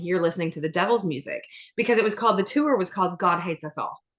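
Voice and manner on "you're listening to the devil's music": mock playful, teasing, ribbing jab. Retelling teasing her husband about his concert: retelling teasing her husband. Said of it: "I was teasing him, saying".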